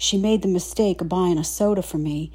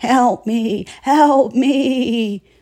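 very slow, high, wavering drawn-out shriek; 5 semitones higher, 7 dB louder than usual. Reading a story where a woman trapped in a cart calls out: shrieking in a quavery voice. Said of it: "shrieking in a quavery voice".

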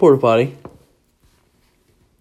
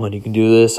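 plain

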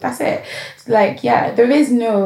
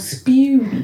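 heavy stress leaning on spew thee; 4 semitones higher than usual. Reading Revelation 3:16 aloud, with stress on 'spew thee'. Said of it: "I had to put emphasis on".

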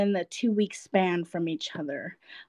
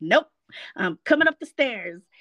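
cheery, eager, happy, enthusiastic. Retelling a husband's reply from the stairs: imitating him happy and enthusiastic. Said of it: "all happy and enthusiastic".

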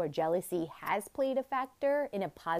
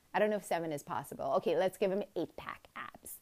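normal talking voice

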